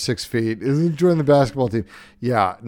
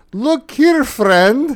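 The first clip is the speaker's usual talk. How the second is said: put-on Swedish accent, higher and louder; 13 semitones higher, 5 dB louder than usual. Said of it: "with some fake Swedish accent".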